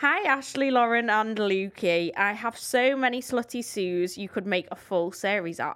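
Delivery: normal talking voice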